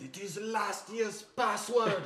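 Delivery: put-on German accent. In a joking exchange, the speaker answers in a german accent. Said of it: "that was a German accent".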